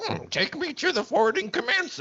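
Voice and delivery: bad, clumsy, very high swooping voice. Retelling what a character said to the clones: terrible Yoda impression. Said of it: "that was a terrible Yoda impression".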